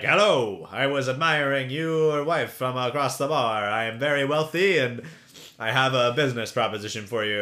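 loud, mustache-twirling, villainous rich man voice. Retelling a scene where Keenan walks up to a couple: Keenan's mustache-twirly rich man. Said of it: "mustache twirly rich man".

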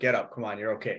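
put-on laughing voice. Retelling a dad's words to a fallen, crying child: imitating dad laughing. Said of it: "He's kinda laughing at me".

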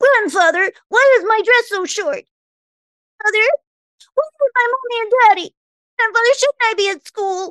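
piping, very high-pitched, squeaky voice. Showing an impression done to make a sister laugh: Shirley Temple impression. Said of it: "I love doing Shirley Temple".

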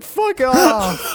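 mock high yell. Recalling yelling at people knocking on the bathroom stall: retelling yelling. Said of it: "I was yelling at them like".

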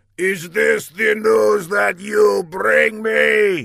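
loud, high, harsh, ragged angry yell. Narrator reads a man advancing on a kneeling servant, shouting. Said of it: "he shouted".

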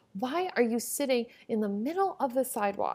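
put-on irate, very angry old lady scolding tone. Retelling an old lady complaining about the speaker sitting on the sidewalk, imitating someone super pissed. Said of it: "was super pissed that I was sitting on the sidewalk".

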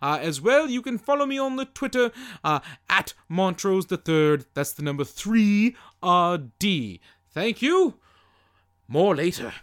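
put-on grand British gentleman voice. Stepping in as Montrose to thank the Patreon listeners: Montrose Monkington voice. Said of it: "for I am British".

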